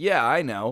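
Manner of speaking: cool, offhand, calm and unbothered, no urgency. Retelling a kid answering his grandma during a house fire, imitating a calm reply.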